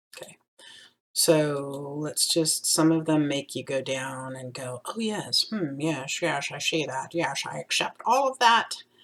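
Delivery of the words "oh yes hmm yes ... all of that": eccentric, dotty, musing nutty professor voice. Speaker accepting terms and conditions on screen, in a nutty professor voice. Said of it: "My nutty professor voice".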